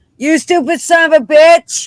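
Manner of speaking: very high, very loud, shrill, blurted sudden yell. Describing residents during an activity, imitating one suddenly yelling out. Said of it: "all of a sudden they'd just yell out".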